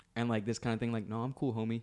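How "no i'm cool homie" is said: fake Los Angeles gangster voice. Retelling a movie character's line while criticizing it: imitating Diablo's LA gangbanger accent. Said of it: "You don't have to act that L A gangbanger".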